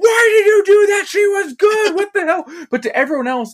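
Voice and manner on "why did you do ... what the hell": shrill, very high, anguished distraught yelling. Retelling a scene where a distraught man yells at his basket: imitating someone yelling. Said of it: "he's yelling at his basket".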